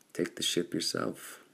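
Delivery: ordinary delivery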